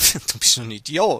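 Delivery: teasing words carried on a laugh. Showing how an insult sounds nicer said with a laugh: said with a laugh. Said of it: "so mit einem Lachen".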